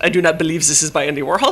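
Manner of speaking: put-on French accent. Retelling what an art gallery director said, in a french accent. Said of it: "presumably in a French accent".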